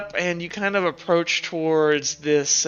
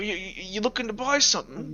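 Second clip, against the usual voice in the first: put-on soft, elderly gentleman voice; 3 semitones higher, 7 dB quieter than usual. Voicing an elderly gentleman leaning out of a store: elderly gentleman. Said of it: "elderly gentleman kind of, like, lean out of the store and go".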